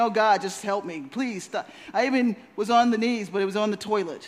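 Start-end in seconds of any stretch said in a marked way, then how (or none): none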